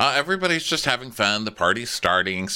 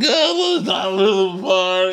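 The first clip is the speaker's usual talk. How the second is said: put-on drunk, very high-pitched, drawn-out scream; 9 semitones higher, 5 dB louder than usual. Retelling a party moment, imitating Kyle: imitating drunken screaming. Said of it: "Kyle is screaming drunkenly as usual".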